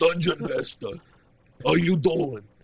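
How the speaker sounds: put-on high, breezy voice in a New York accent. Quoting the Knight greeting Dungeon Master: the Knight's New York accent. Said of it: "with his New York accent".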